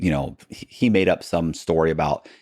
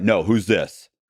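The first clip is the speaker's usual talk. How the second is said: gruff, authoritarian police voice; 3 semitones higher than usual. Speaker retelling a phone call answered by a law enforcement officer, imitating a gruff, authoritarian voice. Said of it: "it's a gruff, authoritarian voice".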